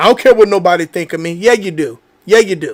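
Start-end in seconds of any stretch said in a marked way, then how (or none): 0.0-1.3 low, fast, dismissive brush-off. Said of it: "one of the biggest lies that we tell".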